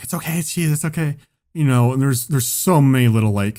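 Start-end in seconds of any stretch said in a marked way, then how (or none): 0.0-1.2 desperate, hushed half-whisper. Retelling what parents in the audience said: desperately half-whispering. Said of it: "desperately, like, whispering".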